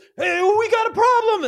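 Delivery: very high, alarmed yelling. Voicing a guard who spots the kids and raises the alarm: guard yelling. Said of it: "he starts yelling".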